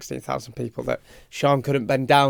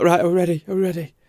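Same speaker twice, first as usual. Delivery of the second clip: play-acted, wound-up, tense, raised, pitched-up voice; 5 semitones higher, 5 dB louder than usual. Retelling own words backstage before going on: imitating own tense self. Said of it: "'Cause I'm so tense and".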